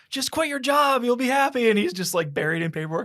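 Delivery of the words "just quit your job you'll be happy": mock very high, very loud, shrill screaming. Retelling a movie scene where a wife screams on the phone: imitating a wife screaming. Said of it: "she's screaming at him".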